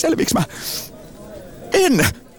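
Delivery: very high, frenzied, frantic, overwhelmed outburst. A speaker lists an overloaded day of work and cooking for twins, stressed and frantic. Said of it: "Rauhoitu, hyvä ihminen".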